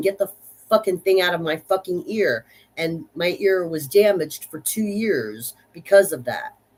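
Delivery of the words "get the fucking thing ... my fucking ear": crying, half-yelled, tearful screaming outburst. Retelling a hospital putting a metal rod in their ear: retelling own screaming and crying. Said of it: "I'm screaming and crying and saying".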